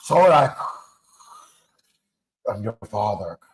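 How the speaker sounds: deep, slow villain voice dropped low. Joking that the other speaker sounds like Darth Vader: Darth Vader voice. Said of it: "You sound like Darth Vader".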